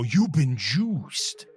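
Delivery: slow, stretched-out host-style speech. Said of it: "he'd come out and go".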